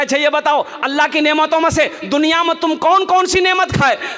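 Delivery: stern, loud, high-pitched voice.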